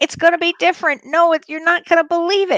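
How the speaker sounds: high, half-yelled voice. Retelling an earlier talk about the coming year: retelling own past screaming. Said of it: "I was screaming".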